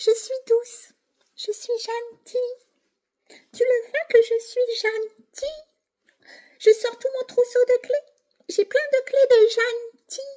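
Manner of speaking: very high, fake-sweet, sugary tiny little voice. Imitating a fake-nice manipulator: imitating a fake-nice tiny voice. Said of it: "Je prends ma petite voix pour te parler".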